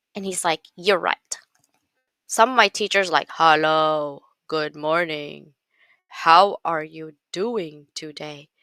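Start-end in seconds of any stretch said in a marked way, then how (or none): 3.4-8.5 very slow, flat, droning monotone. Speaker retells how someone mimics his teachers, in a monotone teacher impression. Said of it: "learn from that monotone".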